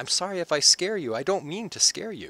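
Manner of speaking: put-on high, childlike small child voice. Game master voices a creature as it steps out toward the players, childish voice. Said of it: "you hear his childish voice".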